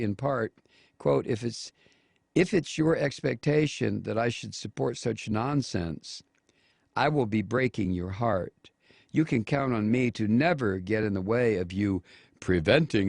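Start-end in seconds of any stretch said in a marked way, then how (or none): none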